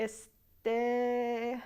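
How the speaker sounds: este stretched out slowly as a filler. Describing a Spanish filler word, drawn-out este. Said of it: "pronounced in a more drawn-out fashion".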